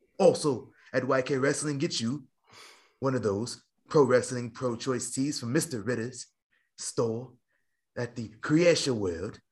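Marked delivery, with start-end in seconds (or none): 8.4-9.3 put-on British accent. Naming a store, then asking if it was pronounced right: put-on british accent. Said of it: "Did I pronounce it right in my British accent?".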